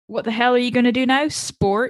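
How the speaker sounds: ordinary talk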